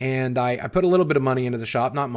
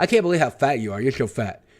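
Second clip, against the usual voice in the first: words mashed as if through a stuffed mouth. Retelling how he insulted you before your comeback, try doing Casey's mouth-full voice. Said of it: "let me see if I can do his voice".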